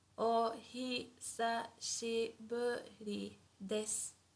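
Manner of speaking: slow, deliberate, drawn-out pronunciation, each part given room. A teacher shows learners how the japanese phrase sounds said slowly: slow pronunciation. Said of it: "slowly it would sound like this".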